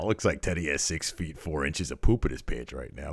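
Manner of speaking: mock muttering under breath. Retelling a commentator's remark about a wrestler: imitating someone muttering under his breath. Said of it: "under his breath".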